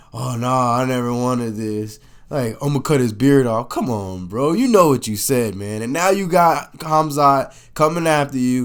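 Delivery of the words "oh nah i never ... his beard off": put-on backing-down voice. Mocking a fighter who talked big and then backed down: imitating Kevin backing down. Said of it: "You can't talk all that and then be like".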